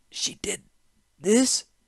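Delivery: very high, gasped delivery. Narrator reading Hajar's reply to Mishra, gasping. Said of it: "he gasped".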